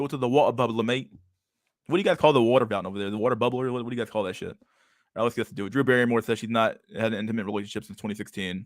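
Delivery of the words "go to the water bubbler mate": bad attempted put-on British accent. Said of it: "I can't speak the British, the British accent, mate".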